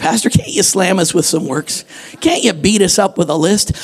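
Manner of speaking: usual speaking voice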